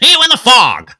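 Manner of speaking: put-on performer voice, shrill, high and very loud. Imitating a performer's line about shows coming back: Jeff Tucker impression. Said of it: "That's my best Jeff Tucker".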